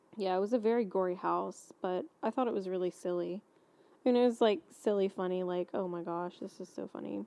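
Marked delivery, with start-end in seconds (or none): 5.8-7.3 put-on demure tone, quieter. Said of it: "the way you said that, very demure".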